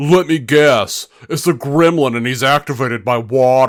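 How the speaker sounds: loud, knowing, wisecracking tone. Retelling what the guy behind in the theater said: imitating the guy behind me. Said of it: "the guy behind me is like".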